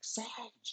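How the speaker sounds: acted-out, very high hailing call. Retelling a story where a man shouts across a river: imitating a shout. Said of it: "he shouts at the sage".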